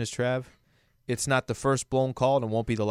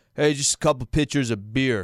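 serious, unsmiling, no-nonsense tough-guy voice. Joking about mustaches, the speaker shows how a mustached man orders, in a slightly deeper voice. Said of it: "your voice gets a little deeper".

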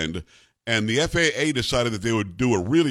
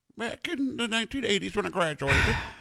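put-on very high, aged, elderly eighty-two-year-old voice; 10 semitones higher, 5 dB quieter than usual. Teasing a co-host about graduation year: imitating Kara as an eighty-two-year-old. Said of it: "my impersonation of you if you were eighty-two years old".

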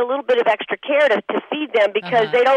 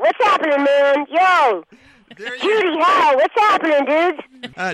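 mischievous, bratty animated cartoon boy voice; 3 semitones higher than usual. Voice actor in an interview contrasting her normal voice with her role; Bart Simpson voice. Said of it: "I sound like here's Bart Simpson".

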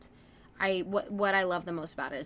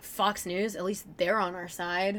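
normal talking voice

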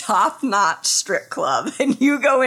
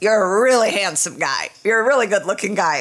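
ordinary talk, nothing marked

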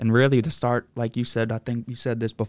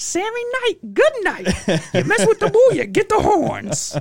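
mock screaming fan cheer, very high, loud, swooping; 5 dB louder than usual. Retelling what a fan in a Sammy Knight jersey shouts: imitating a fan screaming. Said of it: "he's screaming out".

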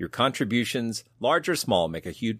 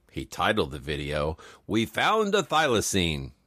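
voice-over narrator voice; 4 semitones lower than usual. Recapping a video title, doing Ron Howard narration. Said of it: "some Ron Howard narration is appropriate here".

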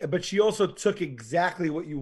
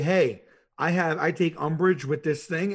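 plain

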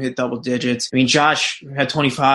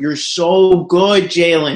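put-on loud admiring yell, stretched out; 5 semitones higher, 5 dB louder than usual. Recalling yelling out to jalen during the game, retelling a yell. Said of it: "I just yelled out".

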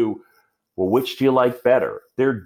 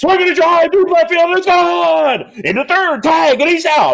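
play-acted, high-pitched, loud sports announcer play-by-play call; 7 dB louder than usual. Retelling his own play-by-play calls from a broadcast open: imitating his own play-by-play call. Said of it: "So it was just like".

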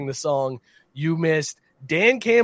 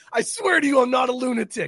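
mock intense, high, fired-up shouted cry; 8 semitones higher than usual. Retelling what Dan Campbell yelled out, imitating Dan Campbell yelling. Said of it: "Dan Campbell yelled out".

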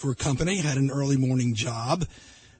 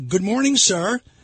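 half-yelled, raised, high called-out voice; 7 semitones higher, 5 dB louder than usual. Retelling getting out of the car and greeting a customer, retelling a yell. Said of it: "kind of a yell out to the customer".

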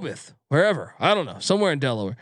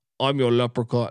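put-on Scottish accent, lower pitch; 4 semitones lower than usual. Trying a celebrity voice on a betting pick line: Sean Connery voice. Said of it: "Trying to do the Sean Connery".

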